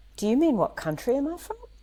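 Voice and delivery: put-on strong, laid-on Australian accent. Retelling a journalist's reply to her question, speaker quotes her in a very Australian accent. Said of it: "With a very Australian accent".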